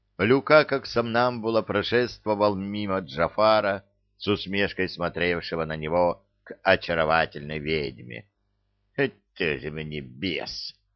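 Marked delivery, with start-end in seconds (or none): 9.0-10.7 soft, scornful, contemptuous snort, very drawn out. A necromancer watching a bewitched man walk past him, snorting contemptuously. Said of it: "презрительно фыркнул некромант".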